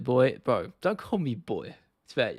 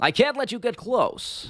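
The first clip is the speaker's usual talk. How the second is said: weird voice, very high pitched and slowly drawn out; 11 semitones higher than usual. Trying out a Chael Sonnen line: Chael Sonnen impression. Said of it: "which Chael Sonnen line he would say".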